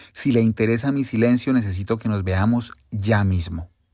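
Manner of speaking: ordinary talk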